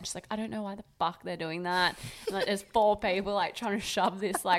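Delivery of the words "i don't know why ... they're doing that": mock upset, distressed bride voice. Retelling a wedding mishap, quoting the bride: imitating an upset bride. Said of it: "she was so upset".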